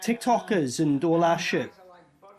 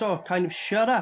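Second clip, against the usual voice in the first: plain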